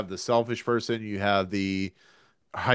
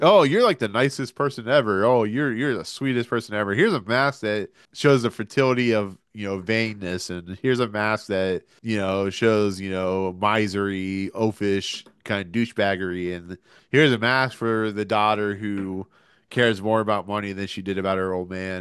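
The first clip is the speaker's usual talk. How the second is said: ordinary talk, nothing marked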